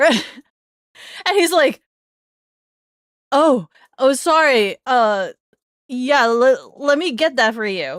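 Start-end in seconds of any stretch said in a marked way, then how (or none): 3.3-8.0 shaken, stumbling, slow and flustered. Retelling how the man taking her ice cream order answered her, imitating a shaken apology. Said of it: "He's he's very shaken".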